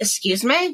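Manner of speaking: offended, furious, indignant angry tone. Retelling being told off by a friend: imitating own angry retort. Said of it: "I got so fucking mad".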